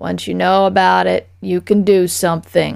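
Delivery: put-on raspy, hoarse voice of an old man. A plant answering a woman's question, in the raspy voice of an old man. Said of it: "the plant advised in the raspy voice of an old man".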